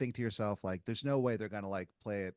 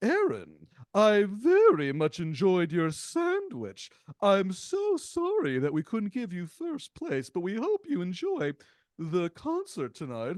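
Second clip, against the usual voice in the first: slow, grand, theatrical king voice, loud, swooping, drawn-out; 8 semitones higher, 7 dB louder than usual. Retelling what a man who calls himself the Earl of Sandwich said: Earl of Sandwich voice. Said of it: "You've invested a lot of a lot of voice work into this".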